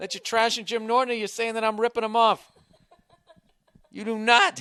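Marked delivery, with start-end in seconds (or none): 3.9-4.6 cracking voice, higher pitch. Protesting to the other speaker with a laugh, voice cracking. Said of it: "Why is my voice cracking?".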